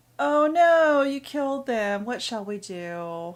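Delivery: graceful, swooping, sarcastic, mocking female voice. Narrating a game, a woman speaks up from behind: graceful, sarcastic female voice. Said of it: "a graceful but sarcastic female voice".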